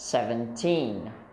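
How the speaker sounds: put-on seventeen, with stress on teen. Contrasting seventy with seventeen in a lesson, stress on teen. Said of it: "We stress on the teen".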